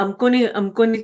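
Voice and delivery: ordinary talk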